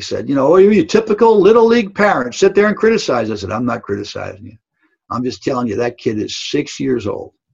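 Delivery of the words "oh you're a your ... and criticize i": mock coach yelling, loud and high-pitched. Retelling how a little league coach yelled at him, retelling a coach's yell. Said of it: "And the coach yelled at me".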